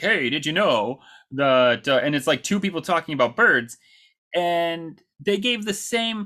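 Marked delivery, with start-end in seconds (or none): 0.0-1.9 slow, drawn-out radio announcer voice. Describing the bird facts a game gives you, in a radio voice. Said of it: "Kind of in a radio voice".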